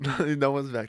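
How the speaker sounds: words broken up by laughing throughout. Answering the other speaker who asks about the laughter, laughing while talking. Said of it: "I'm just laughing".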